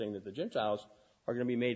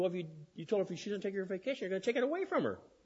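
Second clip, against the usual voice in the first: fast, high-pitched, accusing voice. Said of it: "She said".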